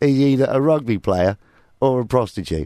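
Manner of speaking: ordinary talk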